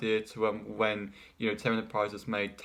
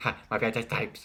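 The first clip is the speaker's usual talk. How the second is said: put-on cartoon character voice. Speaker voicing a quick line for the character Tom, Tom voice. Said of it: "make Tom say".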